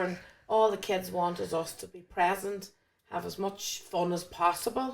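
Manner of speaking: ordinary delivery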